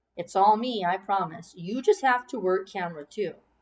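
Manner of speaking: ordinary delivery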